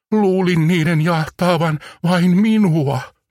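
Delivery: quavering, trembling voice at a very high pitch. Narrator voicing a character just told a spaceship chased him: trembling voice. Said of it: "Nipsun ääni värisee".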